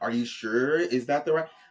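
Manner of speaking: ordinary talk, nothing marked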